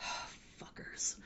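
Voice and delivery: whispered, grumbling mutter under the breath. Describing a scene where a man looks at his ankle monitor, imitating a mutter under breath. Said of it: "it's like under his breath".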